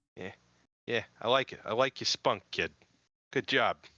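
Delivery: bad, butchered New York Boston accent. In a show's opening skit, answering the first speaker, in a butchered New York Boston accent. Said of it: "Like butchered New York Bostonian accent".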